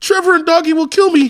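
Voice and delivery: high, fake, pleading, begging tone. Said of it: "I pulled a, like, acting move".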